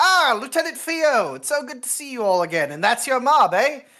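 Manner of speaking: very cheerful, sunny, very high and loud. A game master voices a captain greeting the lieutenant, in a very cheerful voice. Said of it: "a very cheerful voice going".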